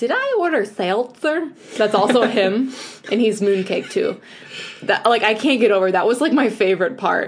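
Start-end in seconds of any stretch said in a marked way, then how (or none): 0.0-1.5 put-on tiny, high, swooping, drawn-out alien voice. Praising a show's voice cast, the speaker quotes the little green alien voice. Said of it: "The little green alien that we barely saw that goes like".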